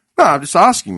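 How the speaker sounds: usual speaking voice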